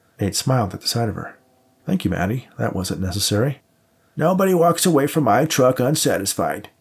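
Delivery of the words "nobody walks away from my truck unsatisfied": grunted, pitched a little high. Reading Maddie speaking to Nate, grunted. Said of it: "she grunted".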